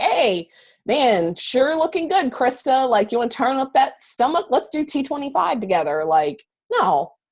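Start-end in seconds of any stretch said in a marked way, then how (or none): 0.0-6.0 pushy, pitched-up, hard-sell salesy voice. Showing how not to message a contact: pushy salesy pitch. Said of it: "I just talk to her like a normal human being".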